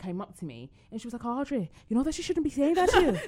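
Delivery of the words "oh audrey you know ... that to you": put-on very loud, high-pitched Irish girl accent. Retelling what a little Irish girl said to Audrey, in an Irish girl accent. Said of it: "Such a good accent".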